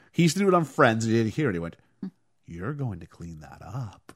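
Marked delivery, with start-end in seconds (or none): 2.5-4.2 angry, seething half-whisper, very hushed, barely audible. Retelling a scene after powder spills on a pool table: Tom Selleck angry half-whisper. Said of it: "Tom Selleck being angry through a whispered voice".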